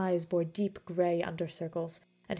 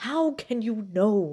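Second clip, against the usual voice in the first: loud, slow, fearful, insistent demanding tone; 3 semitones higher, 7 dB louder than usual. Basil turns on Thaddeus and questions him, demanding. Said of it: "he demanded".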